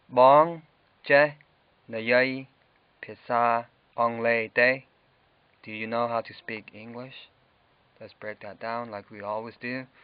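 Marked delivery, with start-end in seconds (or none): 0.1-4.8 much slower and louder. Teaching a language lesson, repeating the phrase again for learners, said slowly. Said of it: "I'll say it slowly".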